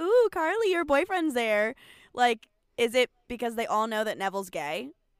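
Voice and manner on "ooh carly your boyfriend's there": mock mean-girl teasing in pitched-up schoolgirl voice. Imitating girls making fun of Carly: imitating girls teasing. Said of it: "the girls that are making fun of her".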